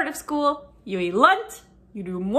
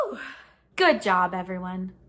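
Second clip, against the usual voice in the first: ordinary talk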